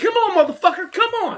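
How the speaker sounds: very high, loud taunting shout. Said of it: "I said".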